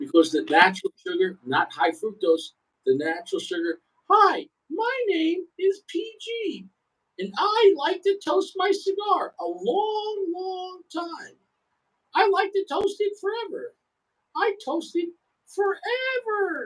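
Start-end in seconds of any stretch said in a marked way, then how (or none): 4.1-16.7 very high, drawn-out, teasing, mocking voice. Mocking a friend's cigar toasting habit, mocking impression of PG. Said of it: "I'm mocking you with a piece of melon".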